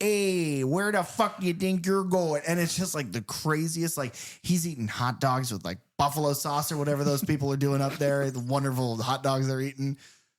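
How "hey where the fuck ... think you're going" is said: put-on thick, laid-on Chicago accent, pitched up. Joking that Chucky might as well be the Chicago Killer, voicing Chucky in thick Chicago accent. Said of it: "that is the most thick. Chica-".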